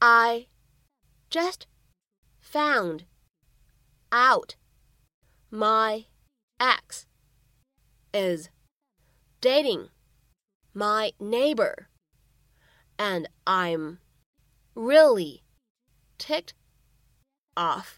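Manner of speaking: very slow, each word spaced out separately.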